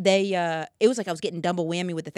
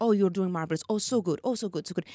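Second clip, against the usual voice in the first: imitated, put-on Italian accent. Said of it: "this accent impersonation".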